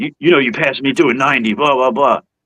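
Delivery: stern, barking police officer voice. Retelling a traffic stop, quoting the cop: imitating a cop barking.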